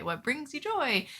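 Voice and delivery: mocking, sarcastic tone, high pitched. Repeating a favorite phrase the way they keep saying it, sarcastic. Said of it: "saying this in a sarcastic way".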